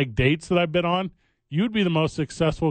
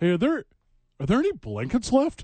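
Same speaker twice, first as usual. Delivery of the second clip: high, swooping sing-song tone; 5 semitones higher than usual. Doing an impression of fans who arrived at the cold game: imitating early-arriving fans. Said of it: "my impression of everyone that showed up".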